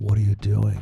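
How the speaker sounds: acted demonic voice. Speaker retells what a partner said during their breakup, in a devil voice. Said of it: "she came up to me in like a devil voice".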